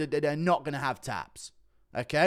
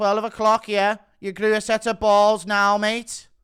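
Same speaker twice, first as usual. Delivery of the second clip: put-on Scouse voice, higher and louder; 4 semitones higher, 5 dB louder than usual. Reading out a direct message from Paddy Pimblett: Paddy Pimblett voice. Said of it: "I'll do Pimlet's voice for Pimlet".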